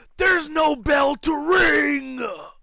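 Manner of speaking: small raspy voice, drawn out. Describing a funny wrestling clip, doing Orton's little raspy voice. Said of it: "Orton's got like that little raspy voice".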